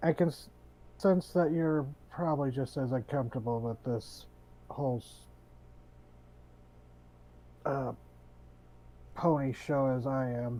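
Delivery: slow, easy, confiding and commiserating conversational tone. Player voicing their character leaning forward to commiserate: lowered voice, conversational. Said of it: "kind of lower his voice, just conversationally".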